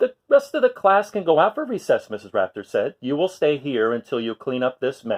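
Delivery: ordinary delivery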